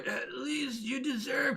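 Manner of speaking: rough, gravelly voice. Voicing a character with a burned throat: gravelly voice. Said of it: "it should be more gravelly".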